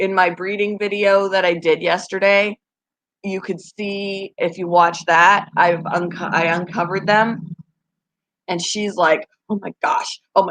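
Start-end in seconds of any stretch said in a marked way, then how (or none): 9.5-10.5 put-on stressed voice, faster. Describing a breeding video, voicing the mother as the speaker uncovers them: imitating a stressed-out mother. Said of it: "Like I'm stressing her out".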